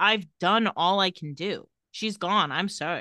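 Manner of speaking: plain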